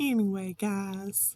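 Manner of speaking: put-on American southern accent. Retelling a catchphrase of Llama Mama Kayla: imitating Llama Mama Kayla's southern accent. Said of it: "With her southern accent".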